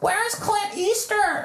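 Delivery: put-on very high, squawking old-timer voice. Predicting what old moviegoers will say beside them, squawking like old people. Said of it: "they're going to be squawking".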